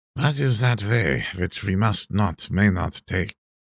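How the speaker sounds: hoarse, husky, grave voice. Reading a novel aloud, a character asks a question: hoarse voice. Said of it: "asked Van Helsing in a hoarse voice".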